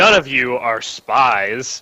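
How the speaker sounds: very sarcastic, heavy, dripping tone. Speaking in character as a queen to suspected prisoners: very sarcastic tone. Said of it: "she says in a very sarcastic tone".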